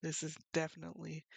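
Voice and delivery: ordinary delivery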